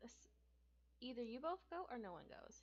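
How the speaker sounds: ordinary delivery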